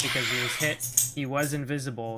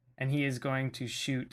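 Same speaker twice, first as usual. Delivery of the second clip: usual speaking voice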